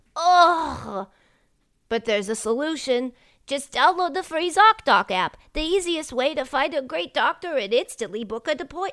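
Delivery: dorky put-on voice. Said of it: "I was doing my dorky voice".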